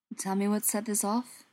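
ordinary delivery

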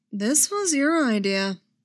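playful, light teasing tone. Luke turns from Han back to the bunk and Leia, teasing. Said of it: "Luke teased".

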